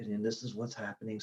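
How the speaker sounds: very soft, hushed, barely-there murmur. Recalling recording a first podcast tucked in a corner: recreating a really soft voice. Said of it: "like really soft voice and just kind of like".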